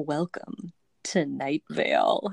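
creepy, eerie announcer voice, very slow, every word stretched. Retelling a podcast's creepy intro line: creepy Night Vale announcer voice. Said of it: "the announcer goes".

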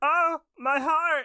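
very high-pitched, put-on cartoon-style voice. Taking turns picking cartoon characters to voice, the speaker picks LSP: LSP voice. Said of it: "So mine's going to be LSP".

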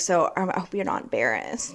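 whispered, breathy facetious remark. Retelling what was said to a date about being underdressed: retelling own sarcastic remark. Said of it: "I was literally doing that".

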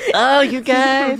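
put-on cartoon child voice. Voicing a character's inner voice as Cartman: Cartman voice. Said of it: "for some reason it's Cartman from South Park".

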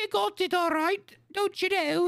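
terrible Scottish accent, pitched very high. A player shows how his Scottish accent falls apart at D&D time, bad Scottish accent. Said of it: "it's terrible".

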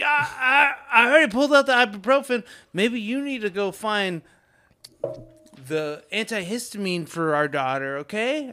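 high, very loud, irritated, angry American man's voice. Retelling a man heard talking to his wife: imitating an american guy pissed off.

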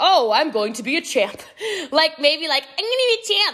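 sweet, cute, high-pitched put-on Irish accent. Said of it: "in a cute little Irish accent".

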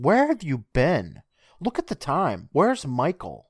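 acted-out yelling. Retelling a scene where a mother yells at her son: imitating a mother yelling. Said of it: "And she yells".

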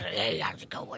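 creepy grumpy nagging voice. Personifying the worst part of yourself as a grumpy old nag: creepy grumpy-nag voice. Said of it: "Whoa, that was creepy".

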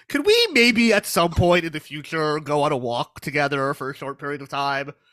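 plain

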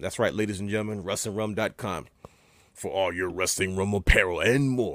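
put-on anime announcer voice. Plugging the show's website and merchandise, the speaker uses a Dragon Ball Z voice. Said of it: "I did it in a Dragon Ball Z voice".

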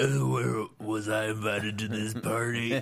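slow, gruff put-on cowboy voice.

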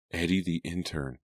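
plain reading voice

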